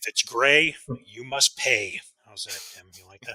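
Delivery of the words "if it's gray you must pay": very loud, booming, slow, word-by-word lawyerly delivery. Repeating for Tim a line you used to say, in your best Johnnie Cochran-like voice. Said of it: "my best uh, Johnny Cochran like voice".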